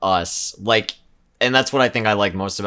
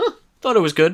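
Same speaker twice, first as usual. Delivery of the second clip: very high, dry dad voice; 11 semitones higher, 5 dB louder than usual. Mimicking a dad after the credits roll on a family movie: imitating a dad after a movie. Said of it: "you sound like a dad that just took his kids".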